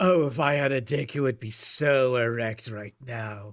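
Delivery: sexually charged put-on villain voice. Imitating the nemesis Ender praising someone for being evil: sexually charged Ender voice. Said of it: "feeling himself whenever he sees someone being bad".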